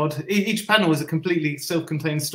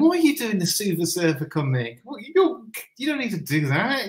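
teasing, playful pretend scolding, high and swooping; 5 semitones higher than usual. Retelling how a mentor pretended to scold a fellow artist: imitating playful mock scolding. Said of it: "pretending to scold Moebius".

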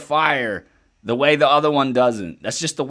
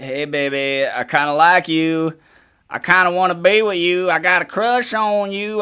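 imitated country accent; 3 semitones higher than usual. Retelling what her old boyfriend said after she found someone new, put-on country accent. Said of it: "I don't know why I'm making a country accent".

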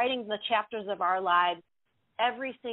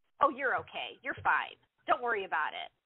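dismissive, brushing-off, sing-song tone. Showing how a brushing-off reassurance to someone sad sounds: dismissive platitude tone. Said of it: "You hear that kind of platitude in that, in that texture of that, of that tone".

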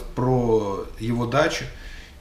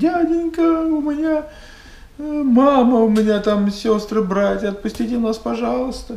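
put-on very high, loud fake sobbing, pleading; 11 semitones higher, 5 dB louder than usual. Retelling how one of the group put on a show; fake crying, pleading. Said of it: "стал якобы плакать".

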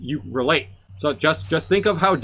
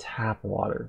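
put-on ominous tone, much lower and quieter; 6 semitones lower, 9 dB quieter than usual. Imitating how a man said two words about tap water, mock-ominous delivery. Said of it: "It was so foreboding".

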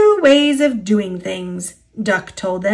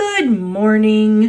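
purring in a smooth, oily voice. Diesel, just introduced, greets Duck, purring in an oily voice. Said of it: "purred Diesel in an oily voice".

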